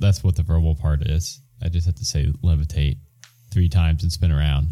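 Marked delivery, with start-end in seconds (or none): none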